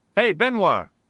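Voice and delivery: loud, high-pitched shouting. Calling out to benoit, who answers there's no need: shouting a name. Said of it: "There's no need to shout".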